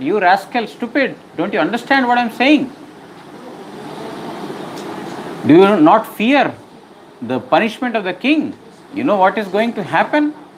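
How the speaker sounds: high, furious, angry scolding. Storyteller voices the king rebuking Jadabharat, mock-angry scolding. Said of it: "That angered the king further".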